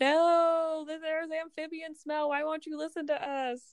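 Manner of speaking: play-acted shrill protesting yell, very high, drawn-out "no". Recapping a story where two people are grabbed and pulled away: retelling a yell. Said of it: "they're both like yelling like".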